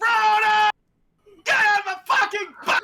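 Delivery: very loud, shrill, high-pitched shout. Retelling how the dad yelled at the movie's ending: imitating dad yelling. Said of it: "my dad stands up and yells".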